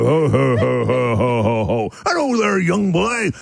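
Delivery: deep, booming baritone voice. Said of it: "In more of a baritone".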